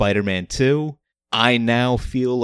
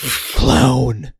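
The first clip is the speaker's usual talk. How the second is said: bad put-on devil voice, louder; 4 dB louder than usual. Retelling a movie scene where the devil yells: bad devil voice. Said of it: "I can't do good voices".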